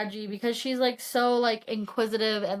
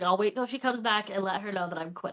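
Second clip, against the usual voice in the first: plain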